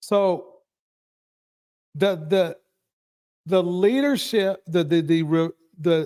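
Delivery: stuttering, repeating "the", words tripping over themselves. Speaker talking through a point and losing the thread, stuttering. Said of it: "excuse me for stuttering".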